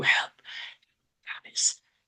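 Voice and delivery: barely-there, faint, breathless whisper. Narrator voices a wounded man looking up at Alice: whispering. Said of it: "He and he whispers to you".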